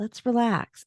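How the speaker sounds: soothing, calming voice. Telling a friend how their voice sounds, imitating a calming voice. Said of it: "your voice is so calming".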